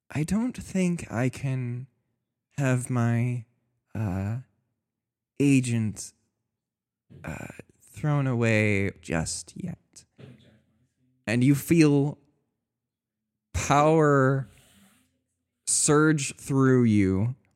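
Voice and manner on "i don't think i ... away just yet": soft, hushed, disembodied half-whispered voice. Voicing a mysterious voice speaking to a dying player: half-whispering voice. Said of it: "you hear a voice whisper".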